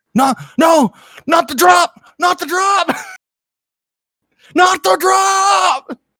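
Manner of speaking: very high, loud panicked shriek, stretched out. Acting out a man scared on a roller coaster, imitating a terrified scream. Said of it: "he's being afraid of a roller coaster".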